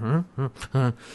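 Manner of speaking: groggy, just-woken, bewildered, confused, repeated "huh". Retelling a scene where a character has dozed off: imitating someone just dozing off. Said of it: "Naranti is kind of dozed off and like".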